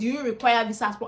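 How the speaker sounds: usual speaking voice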